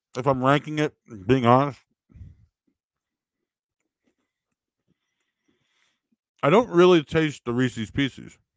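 talking while chewing, mouth full. Tasting a cookie and ranking it, talking with mouth full. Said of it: "I'm talking with my mouth open".

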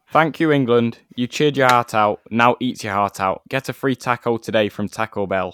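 big, booming, full-volume delivery. Reading out a footballer's tweet in a Harry Maguire impression. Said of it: "in my best Harry Maguire impression".

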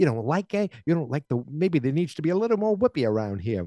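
put-on Chicago accent. Retelling a scene where Marty is a jerk about the trick gum: Marty's Chicago accent. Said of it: "with his Chicago accent".

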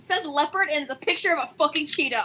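sudden, very angry outburst, rattled off fast. Looking up North African animals during a game session, angry. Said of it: "I'm suddenly very angry".

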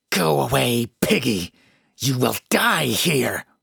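rough, creaky, hateful, seething hiss. Narrator voicing the woman at the staircase bottom, glaring at the speaker: seething. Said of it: "she seethed".

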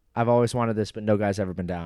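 ordinary delivery

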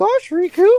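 squeaky cartoon mouse impression. Quoting a game line about voice acting: Mickey Mouse voice. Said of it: "the official voice of Mickey".

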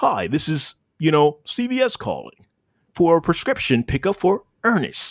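courteous, friendly, pleasant sing-song delivery. Imitating the first pharmacy reminder call about a prescription pickup, polite and pleasant. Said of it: "Very polite and pleasant".

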